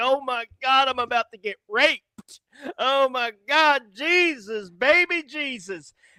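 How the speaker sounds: scared-stiff, loud, high, drawn-out panic. Retelling being startled by a stranger: imitating own past fright. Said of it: "It scared the shit out of me".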